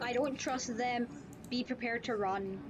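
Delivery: ordinary delivery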